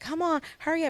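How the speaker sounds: imitated very high yelling. Retelling yelling at the kids in the mornings: imitating own past yelling. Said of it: "yelling at them".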